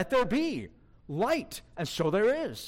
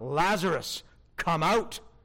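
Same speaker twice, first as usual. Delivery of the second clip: performed commanding calling voice. Retelling the Lazarus story, acting out a commanding call. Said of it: "Note the commanding tone of that command".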